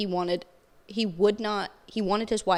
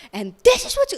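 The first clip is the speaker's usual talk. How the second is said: put-on screaming shout, higher and louder; 13 semitones higher, 9 dB louder than usual. Retelling the first church service attended, imitating a screaming pastor. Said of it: "he's screaming".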